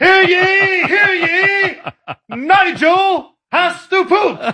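high, shrill, hollered town-crier style yell. Imagining someone as a town crier yelling down a hallway; mock town-crier yell. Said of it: "Like just yelling it down the hallway".

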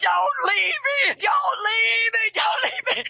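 put-on high scream, escalating and rising. Retelling being left in outer darkness: retelling own screaming. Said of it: "I was screaming".

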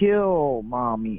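evil, wicked little doll voice. Someone recalls what a talking doll said, in an evil, little, wicked voice. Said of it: "in an evil, little, wicked voice".

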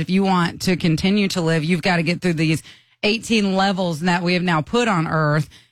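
plain

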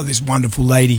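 ordinary talk

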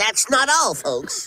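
put-on cartoon pig voice with a stutter. Showing the last of several character voices to a listener, in a stuttering Porky Pig voice. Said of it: "a Porky Pig who talks with a stutter".

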